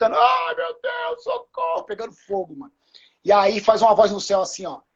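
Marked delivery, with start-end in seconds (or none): 0.2-1.8 put-on very high wailing cry, drawn out. Imagining caged people in a fire, mock screaming for help. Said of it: "lá dentro gritando".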